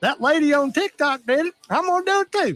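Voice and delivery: put-on, hammed-up Southern accent, very high pitch. Imitating people who copy a tiktok trend: southern accent. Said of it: "I'm using the Southern accent".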